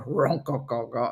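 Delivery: put-on man voice, fully committed. Retelling a wife practising in the car, imitating a put-on man voice. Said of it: "she's got this man voice".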